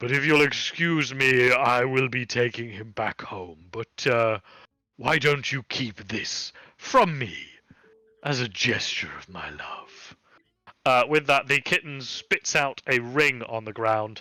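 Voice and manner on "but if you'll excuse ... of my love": demonic voice. Voicing a demonic patron speaking through a kitten: demonic patron voice. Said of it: "your demonic patron suddenly is speaking from the kitten".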